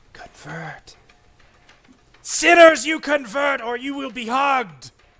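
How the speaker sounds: whispering, eerie. Voicing a cursed object that whispers to nearby players: whispering item voice. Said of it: "can also hear it whispering".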